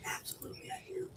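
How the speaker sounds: quiet whispering. Insisting to another speaker that whispering is needed: whispering. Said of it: "Why are you whispering?".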